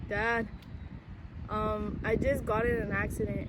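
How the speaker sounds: ordinary talk, nothing marked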